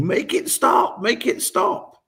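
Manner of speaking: play-acted very high, stretched-out wail. Retelling Joe grabbing her wrist and screaming at the speaker, imitating Joe screaming. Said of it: "she's screaming at me".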